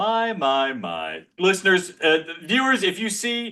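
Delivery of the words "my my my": smug, self-satisfied, pleased-with-itself tone. Greeting listeners before a gloating announcement: smug voice. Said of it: "there's a smugness in my voice".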